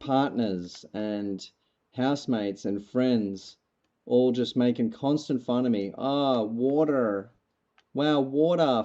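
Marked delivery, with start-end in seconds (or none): 6.0-8.9 very slow, teasing, put-on Australian accent. Recalling friends and housemates teasing them, doing a mocking aussie accent. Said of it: "doing the Aussie accent at me".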